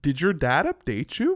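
rural small-town Canadian country accent. Teaching an accent, the speaker says the practice sentence in a country Canadian accent. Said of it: "I can get into this accent up here".

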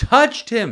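pitch lifted on the words touched him. Reading a healing scene from scripture aloud, higher pitch on 'touch him'. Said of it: "Why do I say touch him, you know, with a higher voice?".

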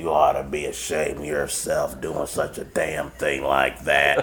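fake raspy smoker's voice. Retelling how a coworker scolded him: imitating Beanie's smoker's voice. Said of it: "she had that smoker's, that smoker's voice".

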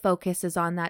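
plain

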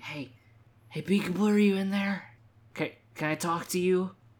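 loud stage whisper. Retelling Scorpia calling to Peekaboo by the curtain: imitating a loud whisper. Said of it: "starts very loudly whispering".

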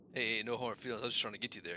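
plain

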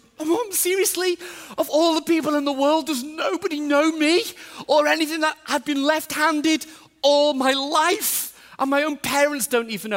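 mock very high, tearful, crying kid's voice. Retelling a son's tearful protest: imitating a tearful child. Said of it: "Same thing. Tears".

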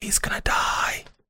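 slow, voiceless whisper. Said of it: "whisper in his ear".

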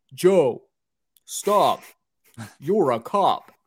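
put-on deadpan delivery, dead straight and slow. Retelling a movie scene where one cop stops another: imitating a deadpan delivery. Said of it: "the most deadpan look on his face".

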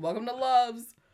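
loud, high voice calling out. Describing how they greet you when you walk in, imitating a loud greeting. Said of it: "They're so loud".

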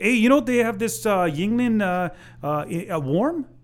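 put-on thick Minnesota accent. Speaker retells what a woman said to them, in a thick Minnesota accent. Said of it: "Give me the Minnesota accent".

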